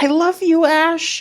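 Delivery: very high, slow, drawn-out woman's voice. Recalling a line from a Pokemon movie: imitating a woman's voice. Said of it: "a woman's voice just being like".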